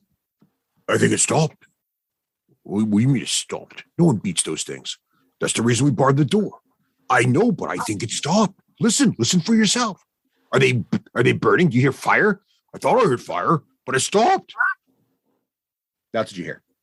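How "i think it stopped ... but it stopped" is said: deep, grumbly, rumbling goblin voices. Voicing goblins talking behind a barred door: deep grumbly goblin voices. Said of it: "deep, deep, deep grumbly Goblin".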